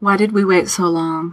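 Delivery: ordinary delivery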